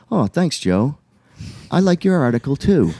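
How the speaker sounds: polite, courteous, gracious tone. Retelling a phone call with a teacher who praised an article: imitating Tim Cartmel. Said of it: "Tim goes just like this".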